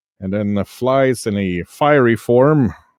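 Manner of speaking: ordinary delivery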